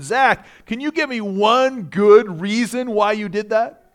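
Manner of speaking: slow, exasperated gasp of disbelief. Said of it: "I gasped in aspira-, exa-, exasperation".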